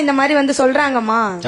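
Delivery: ordinary talk, nothing marked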